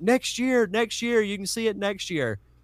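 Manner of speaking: high, yelled, dismissive brush-off. Retelling staff members shoving someone out of a room: imitating people yelling. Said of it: "and they're yelling".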